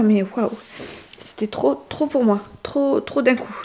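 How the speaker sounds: speaking through tears, tearful crying voice. Describing an overwhelming session to listeners, crying as she speaks. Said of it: "Je suis désolée, je pleure".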